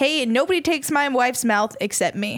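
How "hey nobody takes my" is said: ordinary delivery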